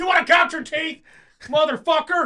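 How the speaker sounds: very loud, shrill, drawn-out, menacing bellow. Joking about a dad yelling at the stop sign holder: mock yelling at a crossing guard. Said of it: "You're yelling at the guy".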